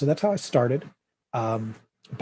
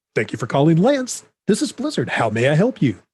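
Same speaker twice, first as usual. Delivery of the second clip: put-on radio announcer voice, higher pitched; 5 semitones higher, 7 dB louder than usual. Speaker recalls answering the Blizzard phones himself; radio-announcer phone voice. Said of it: "A live person with like a radio voice".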